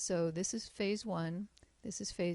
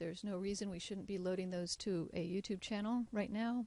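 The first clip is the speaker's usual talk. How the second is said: plain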